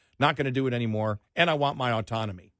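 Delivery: ordinary talk, nothing marked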